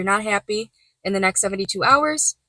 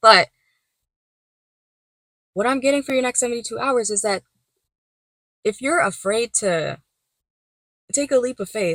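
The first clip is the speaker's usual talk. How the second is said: halting, choked-up voice breaking mid-phrase; 2 semitones higher than usual. Speaker addressing listeners, getting choked up. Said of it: "I'm getting choked up again".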